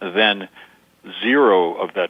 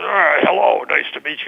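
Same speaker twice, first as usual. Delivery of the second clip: tense, squeezed, strangled, very high nervous voice; 9 semitones higher, 3 dB louder than usual. Showing how a nervous person greets someone: strangled nervous voice. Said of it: "it sounds strangled".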